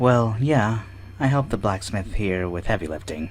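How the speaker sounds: sighing, quiet, unexcited and glum. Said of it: "don't sound too excited".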